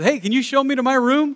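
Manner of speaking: big boisterous voice. Acting out a funny guy who comes in and talks to a junior high kid, imitating a loud, boisterous guy. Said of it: "He's real loud and boisterous".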